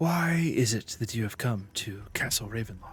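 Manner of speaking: quiet, hushed, kept-down, careful tone. A narrator voicing a woman who checks the door is closed; speaking quietly. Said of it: "kind of quietly".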